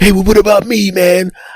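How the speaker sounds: high, whiny, self-focused voice.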